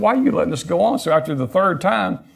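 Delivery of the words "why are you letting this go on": exasperated, fed-up, frustrated, pitched-up voice. Retelling a vision, asking Jesus a question: imitating a frustrated man. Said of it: "He was frustrated".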